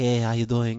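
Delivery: soft, gentle, gentle-giant voice. Doing Sammy, a big friend, greeting someone in his soft voice. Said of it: "he talks just like that".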